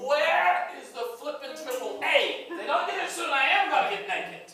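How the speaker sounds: full-on high, loud shouting. Waiting on a broken-down car for the tow service: yelling. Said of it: "You're yelling".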